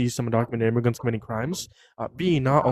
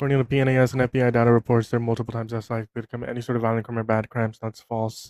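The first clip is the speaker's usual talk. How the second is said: rushed, breakneck, very fast delivery. Answering a challenger's question in a debate, talking really fast. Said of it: "or you're just gonna like talk really fast".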